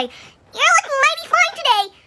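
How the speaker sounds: very high little schoolboy voice. Retelling what an elementary schooler said to them, in a high-pitched boy's voice. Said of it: "these two like high-pitched voices".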